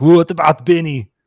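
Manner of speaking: loud, high action-star shout, belted out. Acting out a movie scene the speakers wish had happened: Arnold impression. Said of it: "How was my Arnold".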